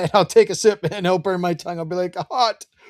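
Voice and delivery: high-pitched talk through laughter. Telling a story to the chat, the speaker breaks up: laughing while talking. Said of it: "I'm laughing, so I can't".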